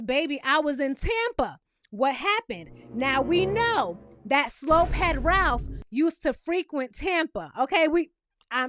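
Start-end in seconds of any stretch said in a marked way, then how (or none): none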